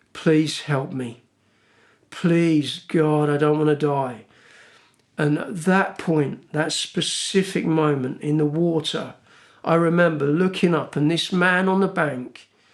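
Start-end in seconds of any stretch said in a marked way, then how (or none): 0.1-4.2 put-on whispered voice. Retelling a prayer made while exhausted in the water: retelling a whispered prayer. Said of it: "just whispering these words".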